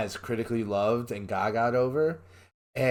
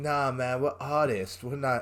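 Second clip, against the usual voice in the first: put-on British rock-guy accent; 2 semitones higher than usual. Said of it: "This is my British rock guy accent".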